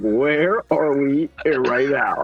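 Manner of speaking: mock very drawn-out, muffled snickering delivery. Retelling how someone asked a question: imitating someone snickering. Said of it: "covering his mouth, like, snickering, like".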